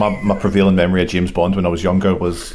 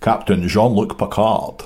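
put-on Scottish accent. Retelling how one guy answered when asked for his favourite captain, like Sean Connery. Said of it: "why did you say it like Sean Connery".

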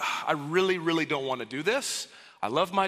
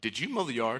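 acted-out low, stern fatherly voice; 6 semitones lower, 5 dB quieter than usual. Retelling being questioned by Dad, the speaker quotes his repeated question, imitating a sterner tone. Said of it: "A little more stern tone".

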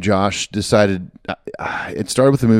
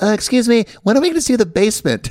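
very high, polite voice; 12 semitones higher than usual. Quoting a scene from Pee-wee's Big Adventure: imitating Pee-wee asking a question. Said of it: "He's like".

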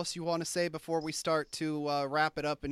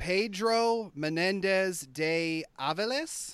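anglicized pronunciation with no rolled r's; 2 semitones higher than usual.

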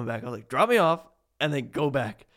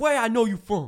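put-on high-pitched, heavy, thick New York accent; 9 semitones higher than usual. Retelling a guy who walked up to them at Walmart, in a huge New York accent. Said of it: "just this huge New York accent".

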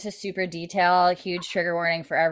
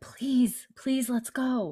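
secretive, high, hushed stage half-whisper; 6 semitones higher, 4 dB quieter than usual. Retelling a scene, quoting a plea to leave: imitating a half-whisper. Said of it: "Claire whispers".

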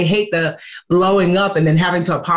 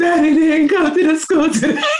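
put-on crying voice, much higher pitch; 10 semitones higher than usual. Retelling a girl's phone call to the speaker, imitating a girl crying. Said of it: "she called me crying like".

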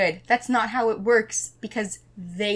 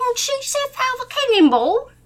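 very high, loud, projected puppet voice; 5 dB louder than usual. Voicing Gonzo in an improvised musical scene: Gonzo voice. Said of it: "I don't know what Gon-, Gonzo sounds like".

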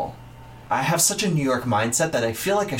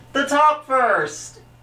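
acted, loud, shrill yell pitched way up; 12 semitones higher, 5 dB louder than usual. Reenacting what she yelled at the teachers, shouted very loudly. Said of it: "She yelled it at our teachers. Sorry, really, sorry. The top first! So, it'll be really loud".

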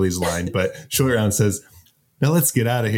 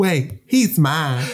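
put-on Southern belle voice; 5 semitones higher than usual. Retelling Samantha's line from a scene, Samantha's Southern belle voice. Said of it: "Why is she like a Southern Belle".

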